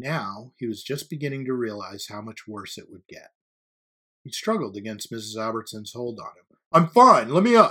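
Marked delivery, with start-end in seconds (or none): 6.7-7.7 high, very loud, strained, struggling shout. A boy struggles against a teacher holding him down and yells. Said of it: "he yelled".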